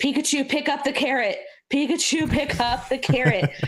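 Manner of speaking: put-on high-pitched, childish shouting. Retelling childhood memories of playing a game: imitating own childhood shouting. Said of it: "memories of just shouting".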